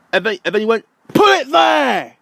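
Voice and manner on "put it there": high, raised, loud shout. Retelling what a man said during a story about a shop, retelling a shout. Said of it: "why are you shouting at me?".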